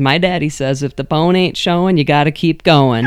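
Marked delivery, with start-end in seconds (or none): none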